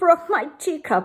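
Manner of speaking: whining, high-pitched complaining tone. Reading a story, a character answers Mama's question, in a whiny voice. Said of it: "whined Jillyboo".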